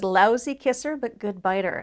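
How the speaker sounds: ordinary delivery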